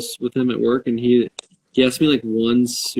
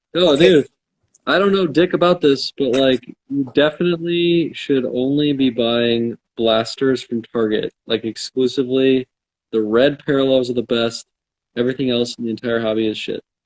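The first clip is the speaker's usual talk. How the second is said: plain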